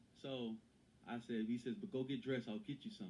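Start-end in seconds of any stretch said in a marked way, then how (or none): none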